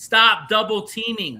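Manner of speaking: mock yelling, loud screaming. Retelling what they yelled at the TV during the game: imitating own screaming. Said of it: "I was screaming at my T V".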